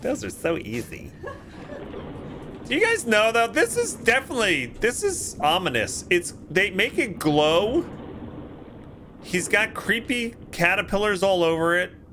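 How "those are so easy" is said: mock-nonchalant, offhand, much lower and quieter. Retelling her reply after beating another headless: mimicking a nonchalant tone. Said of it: "She just says nonchalantly".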